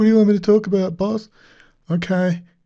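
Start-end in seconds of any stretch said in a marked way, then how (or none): 0.0-1.3 high, mocking, ridiculing corporate presenter voice. Mocking the presenter by acting out his words to his boss: mocking imitation of the presenter. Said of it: "He gets like".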